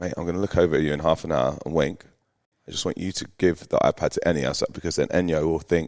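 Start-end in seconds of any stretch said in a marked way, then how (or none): 0.0-2.0 soft, hushed half-whisper. Retelling what was said to him at six AM: imitating own half-whisper. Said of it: "I whisper to him and I go".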